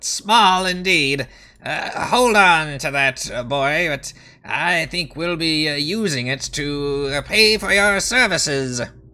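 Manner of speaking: high, amused, chuckling kobold creature voice. Voicing a kobold king answering a small coin offering: chuckling kobold king. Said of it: "he, uh, chuckles and says".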